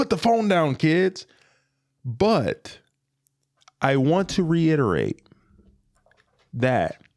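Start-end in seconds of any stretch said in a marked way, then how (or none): 0.0-1.3 put-on higher neighbourhood old man voice. Warning about phone use, imitating the old guy on the block. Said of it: "sound like the old guy on the block".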